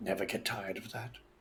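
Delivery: very soft, very quiet, barely audible voice. Saying it to two companions while going inside: very quiet voice. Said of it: "very quietly say to these two".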